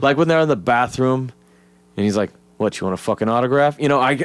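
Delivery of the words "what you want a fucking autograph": smug, condescending, patronizing tone. Retelling a bathroom movie scene imagined with another actor: condescending smug Alec Baldwin delivery. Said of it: "Alec Baldwin with that fucking condescending, smug shit".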